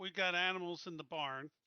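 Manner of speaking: plain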